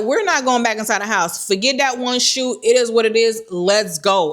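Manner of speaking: normal talking voice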